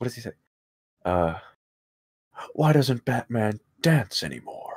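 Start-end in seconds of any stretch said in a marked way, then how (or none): 2.5-4.8 playful, whimsical superhero delivery. Trying an impression after asking to do one: Adam West impression. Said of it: "That's my best".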